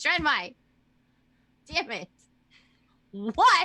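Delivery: furious in character. Playing a character forced to answer: super mad in character. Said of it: "I'm super mad when I say Drenmai".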